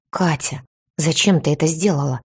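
plain

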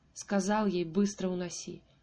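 ordinary delivery

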